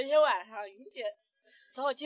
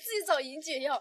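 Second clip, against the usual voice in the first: ordinary delivery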